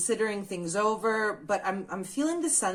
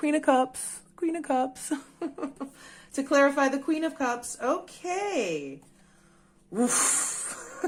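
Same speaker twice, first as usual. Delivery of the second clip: high voice, words broken up by laughter; 6 semitones higher than usual. Showing viewers a tarot card that just came up, laughing while talking. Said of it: "Sorry, I'm laughing".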